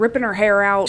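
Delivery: ordinary delivery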